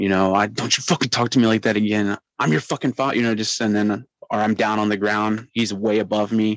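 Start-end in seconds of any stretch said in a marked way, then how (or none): 0.5-3.2 put-on angry voice through gritted teeth. Retelling being yanked up by the father: imitating angry father through gritted teeth. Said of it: "in my face spitting, you know, that mad grit teeth".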